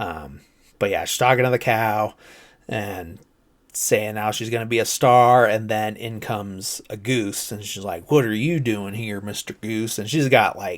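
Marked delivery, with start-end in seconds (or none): 8.1-10.0 put-on Southern accent laid on thick, over the top. Retelling a scene where a character talks to a goose, over-the-top Southern accent. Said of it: "when non-Americans do Southern accents".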